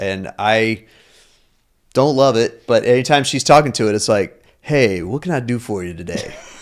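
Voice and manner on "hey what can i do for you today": seductive, sexy assistant-style voice. Imitating the chatbot greeting the wife: sexy ChatGPT voice. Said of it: "my wife's Chat G P T has a sexy voice".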